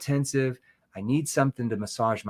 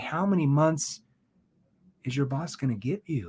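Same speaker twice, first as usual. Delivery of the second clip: worried, concerned tone. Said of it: "Then I lower down to my concern tone".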